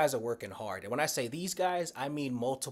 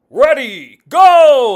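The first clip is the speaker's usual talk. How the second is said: very loud, very high, big announcer voice; 14 semitones higher, 25 dB louder than usual. Recalling trying to emulate the announcer, in an announcer voice. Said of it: "trying to emulate the announcer voice".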